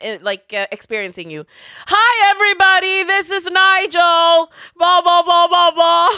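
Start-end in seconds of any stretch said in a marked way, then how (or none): 1.9-6.1 mock, put-on shouting, much louder. Showing a podcast co-host how he sounds to Evelyn, imitating Nigel shouting. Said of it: "He's shouting".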